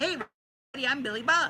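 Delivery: high, put-on cartoon voice. Showing how they normally do the character voice: Billy Bob voice. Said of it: "the way I normally do it, which is like this".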